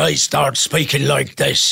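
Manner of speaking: gruff, rough, creaky sea-dog pirate voice. Showing the mask voice when it turns into a pirate: pirate voice. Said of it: "the mask turns into a pirate".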